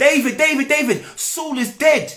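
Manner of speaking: high, eager call, bursting with excitement. Retelling a messenger running to tell David, imitating an excited messenger. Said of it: "get excited to come and tell David ... Excited".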